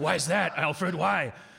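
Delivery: put-on, loud, rough, gravelly rasp pushed out. In a comedy bit, Batman answers Alfred about his suit, in an affected gravel voice. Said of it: "you don't have to speak to me in that affected gravel".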